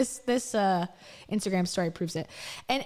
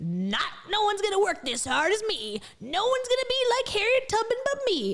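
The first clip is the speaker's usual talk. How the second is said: very high, powerful, commanding, authoritative bravado; 11 semitones higher than usual. Describing a woman's bravado in her talks, imitating an authoritative voice. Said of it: "Her voice is much more authoritative".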